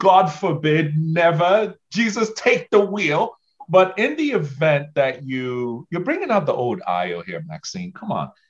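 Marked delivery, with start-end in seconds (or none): 0.0-3.4 put-on Nigerian accent, pitched higher. Explaining insurance options to a listener, speaking like a true Nigerian, Nigerian accent. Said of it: "let me speak like a true Nigerian".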